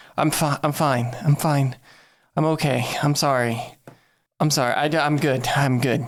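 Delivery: acted flustered apologetic tone. Playing a character taking off a mask after being carried out on a gurney: acting flustered and apologetic. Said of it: "I'll take the mask off and be like".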